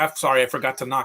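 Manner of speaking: normal talking voice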